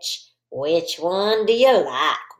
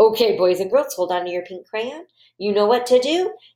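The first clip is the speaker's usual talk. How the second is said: ordinary talk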